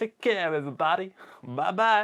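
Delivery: put-on odd, weird American accent. Signing off and saying goodbye to everybody: weird American accent. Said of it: "that weird American accent".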